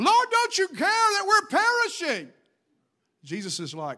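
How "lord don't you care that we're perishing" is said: very high, frantic, flipped-out, panicked cry. Retelling the disciples' cry in the storm: imitating panicking disciples. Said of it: "the disciples were flipping out and panicking".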